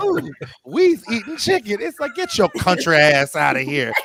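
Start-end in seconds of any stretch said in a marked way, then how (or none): 0.0-1.8 put-on very high-pitched ad spokeswoman voice, "ooh". Imitating the Popeyes chicken lady from the ads: imitating the Popeyes chicken lady. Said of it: "She's just like".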